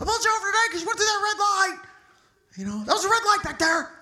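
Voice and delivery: very high-pitched, shrill screaming. Speaker retells what the man who pulled them over said: retelling a scream. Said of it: "and he's just screaming".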